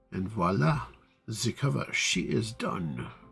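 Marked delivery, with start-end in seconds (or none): 0.1-0.8 terrible fake French accent. Announcing that an exported cover file is finished: terrible fake French accent. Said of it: "A terrible French accent".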